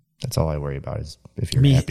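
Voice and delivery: ordinary talk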